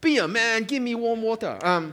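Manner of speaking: clumsy, bad put-on Chinese accent. Retelling what people say when offered a cold glass of water, bad put-on accent. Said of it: "that was a bad accent".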